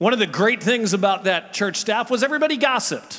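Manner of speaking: lightly sarcastic. Talking about the staff at a church they worked at, a little sarcastic. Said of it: "I was being a little sarcastic there".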